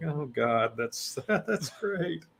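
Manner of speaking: high, slow, nervous chuckle through the words. Explaining why they were laughing, showing it: nervous laughter while talking. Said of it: "it's more of a nervous kinda laugh".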